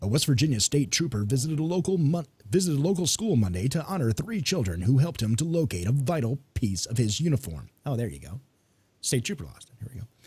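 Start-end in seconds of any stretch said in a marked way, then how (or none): 0.0-7.7 newsreader-style announcer delivery. Reading a news story aloud for the other speaker, in news announcer voice. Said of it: "I'm going to use my announcer voice".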